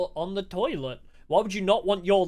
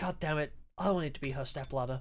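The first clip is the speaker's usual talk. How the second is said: low, jealous grumbling voice; 4 semitones lower, 10 dB quieter than usual. Explaining what a reaction really meant: imitating Takumi's jealous reaction. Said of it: "him being jealous 'cause he wanted to be".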